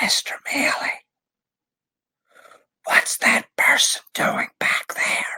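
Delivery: whispered, loud enough to carry. Retelling what a student said in class: imitating a student's stage whisper. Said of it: "says in a stage whisper".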